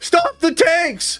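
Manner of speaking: high, slow, mock dramatic proclaiming delivery. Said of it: "Stop the presses".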